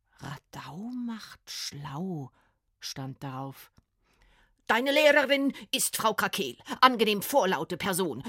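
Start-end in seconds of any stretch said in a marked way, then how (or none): 4.7-8.3 thundering, booming, loud announcement-style voice. A woman at a classroom door tells Frieda who her teacher is, booming. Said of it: "dröhnte die dicke Frau".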